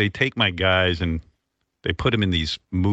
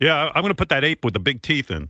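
high-pitched, excited, thrilled gushing; 6 semitones higher than usual. Imitating a colleague who gets all excited about a movie: imitating excited Baba Booey. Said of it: "He gets all excited".

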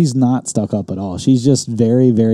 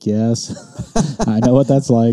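mock-defeated, resigned tone. Acting out his wife's reply to his joke about prices, mock-defeated tone. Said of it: "with defeat in her voice".

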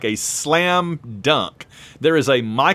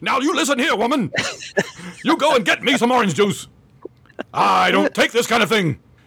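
overacted, hammy, high delivery; 8 semitones higher than usual. Imitating an actor who overacted in an episode: imitating an overacting actor. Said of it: "he's like his wife in the morning".

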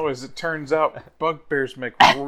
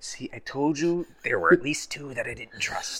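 very quiet, hushed whisper; 10 dB quieter than usual. In a role-play, one character whispers in another's ear, whispering in her ear. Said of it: "I just whisper in her ear".

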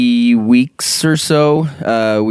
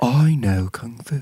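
put-on British-sounding heroic voice, quieter; 6 dB quieter than usual. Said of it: "He's not even British, but he sa-".

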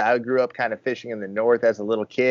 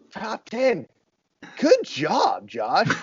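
very high, swooping, falsely surprised, condescending tone; 9 semitones higher than usual. An angler retells a fellow angler's remark about his season, mock-condescending, surprised tone. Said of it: "the way he said it".

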